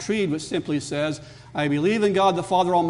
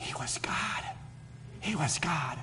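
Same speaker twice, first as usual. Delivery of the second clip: reverent, devout, very soft hushed whisper; 13 dB quieter than usual. Retelling what she said to the gathered relatives, retelling a reverent whisper. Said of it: "very reverently in a whisper".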